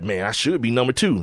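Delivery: complaining, aggrieved gripe. Retelling how Shaq complained about the all-time scorers list: imitating Shaq complaining. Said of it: "he was in there complaining about".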